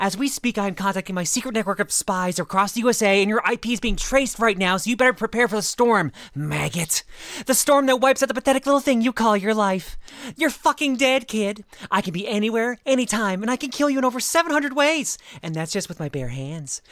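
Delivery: put-on enraged, menacing tone. Getting into character for Daniel, acting an enraged threat. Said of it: "let me get into character".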